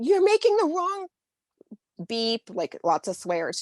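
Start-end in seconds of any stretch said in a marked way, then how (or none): 0.0-2.4 put-on scream, higher. Retelling screaming at a character while typing: retelling own screaming. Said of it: "I was screaming like".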